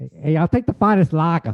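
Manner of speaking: put-on speaking in a Boston accent. In a sketch, a customer orders a beer from a server: Boston accent. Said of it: "You do a Boston accent".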